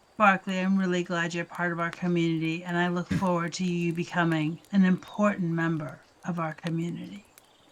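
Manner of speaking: very soft, low, hushed murmur. Your character speaks to another character so only he can hear, very softly. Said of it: "I say very softly so only he can hear me".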